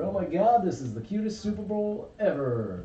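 plain

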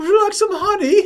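put-on very high British accent. Imagining a visit to Winnie the Pooh and acting out his greeting: British-accented Winnie the Pooh voice. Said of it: "Does he have a British accent?".

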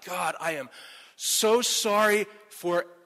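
very slow, pleading, begging delivery. Retelling praying to god after being stopped, imitating own pleading prayer. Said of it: "I started pleading with God".

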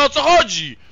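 high, loud, sincere, exasperated outburst.

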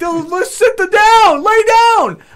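shrill, loud screaming, very high pitched. Retelling watching a game, retelling screaming at the tv. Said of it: "I'm screaming at the T V".

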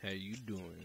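very low, really deep voice. Showing how to talk to girls with a greeting: really deep voice. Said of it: "with a really deep voice".

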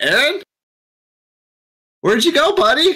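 very high, very loud shouting. A player's character walks through the forest calling for Aaron, as loud as possible. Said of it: "Like as loud as I can".

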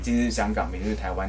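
ordinary delivery

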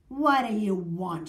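snarling voice. A wizard opens his door to Amanda, snarling. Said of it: "He snarled".

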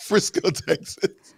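high-pitched reading while laughing. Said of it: "I'm only laughing because".

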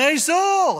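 high-pitched, loud, yelled call.

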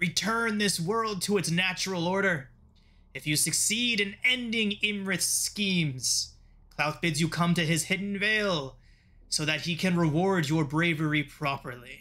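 stately, grand, proclaiming delivery. A masked figure leans over a descending ship to address those below, booming voice. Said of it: "he says in a booming voice".

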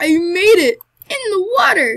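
very loud, high, near-crying triumphant yell. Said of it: "It sounds like I'm about to cry".

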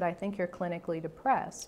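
ordinary delivery

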